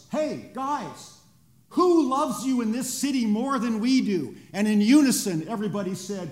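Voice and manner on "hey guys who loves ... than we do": huge, booming rallying shout. Retelling a staff member calling out across a dining hall: retelling a huge booming shout. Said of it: "he says in a huge voice".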